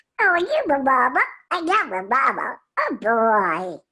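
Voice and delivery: put-on slow, drawn-out, high baby duck voice. A voice actor demonstrates the duck he plays, in Little Quacker's baby duck voice. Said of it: "he sounds like this".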